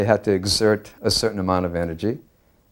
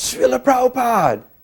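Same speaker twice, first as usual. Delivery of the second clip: mock yell, acted-out shouting, much higher. Recounting running through a crowd, the speaker is retelling a yell. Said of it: "I yelled out".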